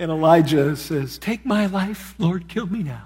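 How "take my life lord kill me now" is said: high, swooping, complaining whiny voice. Retelling Elijah's answer to God in the cave, mock-whining as Elijah.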